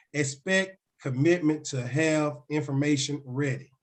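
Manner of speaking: slow and deliberate.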